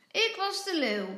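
loud, high calling out. Narrator reads a little boy's line to a girl, calling out. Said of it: "roept hij".

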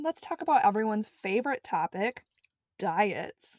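dripping, exaggerated, heavily sarcastic delivery. Starting a new section of a talk, with heavy sarcasm. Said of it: "I said that with heavy sarcasm".

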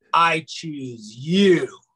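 languid, slow, unhurried, drawn-out speech. Retelling someone boarding who turns and answers a welcome, imitating slow speech. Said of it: "she just is like real slow".

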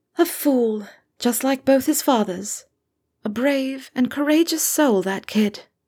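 mild, gentle, soft-spoken manner. Reading a story, Lily speaks to Severus about Harry in a soft voice. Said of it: "Her voice was soft".

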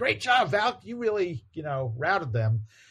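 bright high voice.

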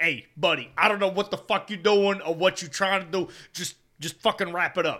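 put-on Italian dad voice, Italian accent. Retelling a video of a dad's birds-and-bees talk: imitating an Italian dad. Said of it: "Italian dads talking to their".

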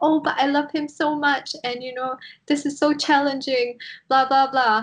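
high, mock gushing, sing-song voice. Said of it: "But she's like".

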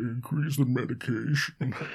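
high-pitched words spoken through a yawn. Retelling a man saying to increase the medication, imitating a yawn like Buffalo Bill. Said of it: "Because yawning just goes".

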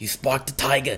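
put-on, mock-enraged voice. Quoting a guy who gets enraged, in a mock-enraged imitation voice. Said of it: "you do that voice so perfectly".

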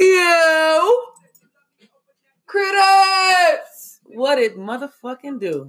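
very slow, excited, high, drawn-out scream. Speaker greeting the audience, calling them critters: excited screaming. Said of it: "Sorry if I'm screaming out here".

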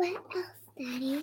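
quick whispering.

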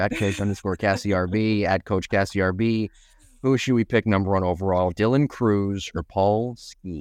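plain

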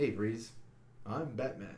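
low, campy movie-superhero style delivery. Retelling a batman line from a movie trailer: imitating a campy batman line. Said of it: "He's like".

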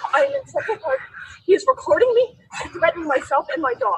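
shaky, trembling, frightened, panicked voice. Calling the police to report being threatened: trembling panicked voice. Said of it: "did you guys hear her voice, though? The trembling?".

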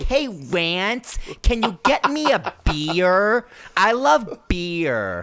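very slow promo delivery, "Rant" stretched out. Showing how they will talk to Rant: Nikki Bella promo impression. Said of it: "I'm just gonna talk just like that".

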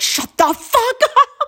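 high, slow, angry, hushed voice. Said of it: "I'm like".

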